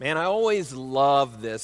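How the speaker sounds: dry, sarcastic, ironic, put-on enthusiasm. Reading a Scripture passage on the tongue aloud: sarcastic. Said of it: "I say that sarcastically".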